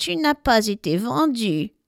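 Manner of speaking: sneering, mocking, taunting voice. The toy shop's cat speaks up in the dark, in a mocking voice. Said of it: "fait tout à coup une voix moqueuse dans le noir".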